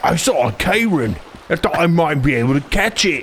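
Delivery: high, put-on dopey character voice. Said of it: "He's like".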